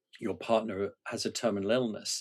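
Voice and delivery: normal talking voice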